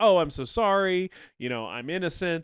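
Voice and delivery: mock sorry pleading tone. Retelling how a defendant plays to the jury: imitating a fake compassionate plea. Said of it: "play the compassionate angle with the jury".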